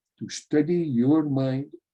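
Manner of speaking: YOUR stressed, pitch lifted slightly. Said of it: "emphasize the word your".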